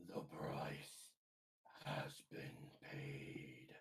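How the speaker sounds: slow, hushed, drawn-out, strained whispered character voice. Voicing a figure speaking for the first time: strained character voice. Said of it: "Forgive my voice 'cause I'm still recovering".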